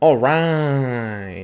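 bad cartoon mom voice, word "right" drawn out. Moving on to number three on his list; very shitty Linda impression. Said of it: "my very shitty impression of Linda from Bob's Burgers".

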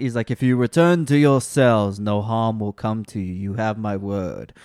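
deep movie-hero voice. Reviewing a movie, quoting Chris Hemsworth's dialogue: deep Chris Hemsworth impression. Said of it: "he goes so deep in some scenes".

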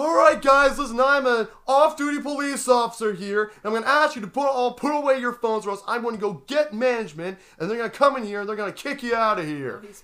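furious, shrill, very loud screaming. Retelling how a man screamed at the people around him: retelling a man screaming. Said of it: "He's literally screaming".

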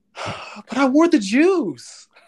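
slow, slightly high, deflated, dejected sighing. Retelling what an arrested robber said: imitating a dejected sigh. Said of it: "sigh dejectedly and say".

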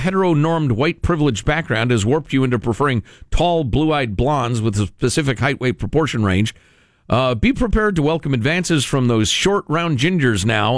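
normal talking voice

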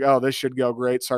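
openly sarcastic tone. Quoting someone on Twitter doubting the new hire: imitating a sarcastic remark.

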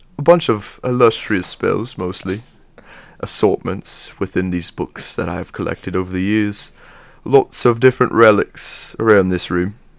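fake English accent, wizard-like style. Asked whether he has a British accent, the wizard speaks in a put-on British accent. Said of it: "I could do one".

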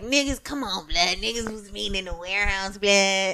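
soft, nasty, put-on LA street-thug voice. Quoting people from the city who disliked this season, in a nasty LA thug voice.

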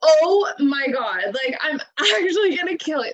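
mock jumpy, startled, frightened outburst. Recounting being startled by their mom through the doorbell, retelling being scared. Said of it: "I was so scared".

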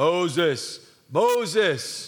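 slow, drawn-out heavenly deity voice with long vowels. Reading the burning bush passage aloud, calling to Moses: God voice. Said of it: "That's my God voice".

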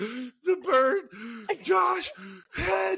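very high, breathless, choking laughter. Retelling how Alyssa reacted while laughing at the injury, imitating breathless laughing. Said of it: "Alyssa couldn't even, like, breathe".

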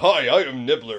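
loud, proper, gentlemanly grown-man voice. Imitating how a cartoon character talks, like a proper man: Nibbler voice. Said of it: "doing Nibbler's voice".

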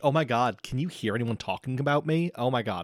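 mock snobby, catty teen girl voice. Imitating how a girl in a nineties TV show would talk: imitating a bitchy nineties TV girl. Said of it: "bitchy thing that a girl in a nineties T V show would have said".

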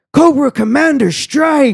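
play-acted, very high, shrieking screamed yell. Retelling how a stranger outside a bar screamed: imitating a scream. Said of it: "he just screams".

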